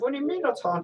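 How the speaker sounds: put-on British accent, pitched way up. Retelling a film scene, quoting the heroine to a realtor: british accent. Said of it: "in a British accent".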